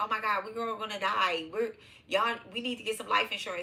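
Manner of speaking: mock alarmed, frantic outburst, losing it. Acting out someone going crazy about dying: imitating someone going crazy. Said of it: "you know how you start going crazy".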